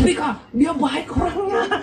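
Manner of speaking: put-on high, laughing, protesting blurt of a young voice.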